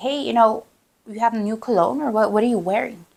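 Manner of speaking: acted, wary, suspicious, probing tone. Retelling a husband questioning a man about his smell: imitating a suspicious question. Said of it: "all suspicious and like".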